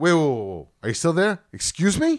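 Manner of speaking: put-on East Coast accent. Retelling a phone call where the other woman went silent, retelling own East Coast tone. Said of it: "that's when I know my tone comes out".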